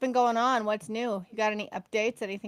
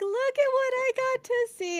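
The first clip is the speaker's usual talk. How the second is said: thrilled, excited gushing, pitched very high; 14 semitones higher than usual. Retelling sending a friend Northern Lights pictures: imitating own excited voice. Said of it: "all excited".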